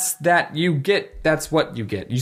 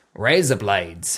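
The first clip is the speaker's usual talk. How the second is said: Australian accent, much lower; 6 semitones lower than usual. Demonstrating how a spoken phrase comes out, in an australian accent. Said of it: "in an Australian accent".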